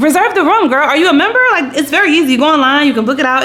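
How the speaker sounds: high, loud exasperated rant.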